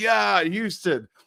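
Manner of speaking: put-on drunken slurred speech. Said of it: "but he's slurring".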